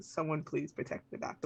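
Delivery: muttered under breath. Speaking in character to the universe: muttered under breath. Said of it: "I say it under my breath".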